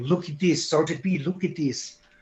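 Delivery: put-on Serbian-accented speech. Retelling what the photographer said on arriving with the camera: imitating a thick Serbian accent. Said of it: "he's got that real thick Serbian accent".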